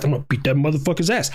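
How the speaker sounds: put-on muttering under breath. Retelling own past threat about a fight, imitating muttering under breath. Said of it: "under my breath".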